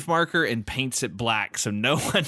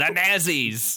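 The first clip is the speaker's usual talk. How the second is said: put-on acted elderly man voice; 3 semitones higher than usual. Comparing how it's said to a cartoon character, speaker does Cotton Hill voice. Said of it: "Hank Hill's dad, Cotton, in King of the Hill".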